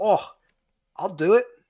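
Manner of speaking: put-on strong Scottish accent, very high pitched. Act out the actor agreeing when they call him up, in a very Scottish David Tennant voice. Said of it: "He has a very Scottish accent in real life".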